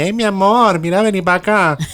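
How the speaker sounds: thick, very high Maracucho accent. Explaining how a true Maracaibo woman talks, strong Maracaibo accent. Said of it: "te hace un acento más fuerte, te habla así".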